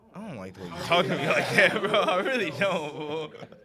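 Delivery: high, loud, laughing, mock-offended complaining.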